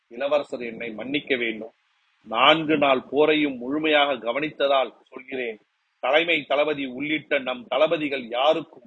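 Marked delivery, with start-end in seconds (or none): none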